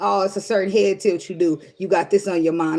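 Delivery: ordinary talk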